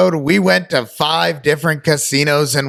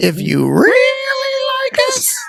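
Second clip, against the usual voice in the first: very high swooping sing-song voice, "really" drawn out. Plugging the show's merch shop on the intro, in High Pitch Pete voice. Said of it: "I do show High Pitch Pete every time I say".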